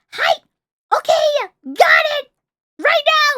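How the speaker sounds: loud, slow, high voice. Showing how you must answer your coaches at practice, in a loud voice. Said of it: "kind of like a military".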